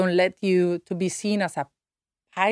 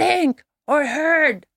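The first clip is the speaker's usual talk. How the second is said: acted, irritated, upset man's voice, pitched up; 9 semitones higher, 4 dB louder than usual. Retelling a man's reply after the speaker heard a voice: imitating an upset man. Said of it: "he was so upset".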